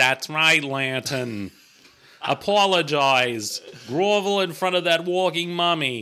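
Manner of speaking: put-on Boston accent. Repeating another speaker's line to lantern in a boston accent. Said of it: "That's a very good Boston accent".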